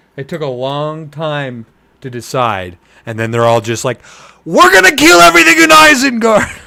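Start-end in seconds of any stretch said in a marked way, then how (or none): 4.4-6.4 very loud, high, rasping war cry. Summing up the creatures' plan to attack Isengard: imitating them yelling. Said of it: "I shouldn't have yelled into the mic".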